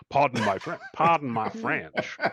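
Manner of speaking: put-on deep South American accent. Imitating Bob swearing and apologizing: imitating Bob in deep South accent. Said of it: "my one American accent, is sort of deep South turn of the century".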